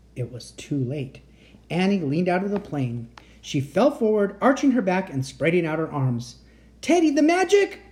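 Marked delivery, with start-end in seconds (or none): 6.9-7.7 very high, urgent crying out. As she leans out of the plane, he calls to a companion, crying out. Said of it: "Cried Jack".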